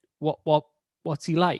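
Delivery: ordinary delivery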